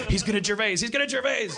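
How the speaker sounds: high, loud, mock alarmed voice.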